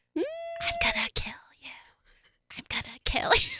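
eerie, creepy, very high whisper. Retelling what a man kept repeating: creepy whisper. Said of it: "Is my creepy whisper".

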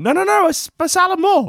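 mock pleading, squeaky, pitched way up.

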